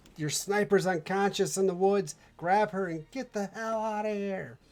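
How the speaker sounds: screaming. Voicing a woman during a battle scene, screaming. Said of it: "She's screaming".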